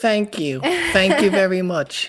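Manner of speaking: very high, swooping, fake British accent. Joking thanks after praising a speech, in a put-on British accent. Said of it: "That's my British accent".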